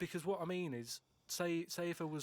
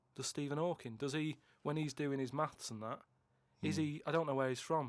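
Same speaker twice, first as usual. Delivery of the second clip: ordinary delivery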